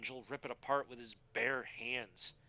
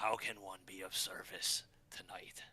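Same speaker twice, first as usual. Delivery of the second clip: awkward, low, creepy rat-demon character voice; 5 semitones lower than usual. Voicing the rat demon offering service: creepy, awkward rat demon voice. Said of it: "his all creepy, awkward self".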